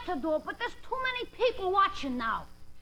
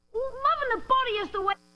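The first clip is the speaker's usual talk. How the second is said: ordinary delivery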